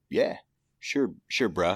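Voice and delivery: laid-back, easygoing beach surfer dude voice. Retelling the brother's reply to the speaker's question, in surfer-dude voice. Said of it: "he talks like a fucking surfer".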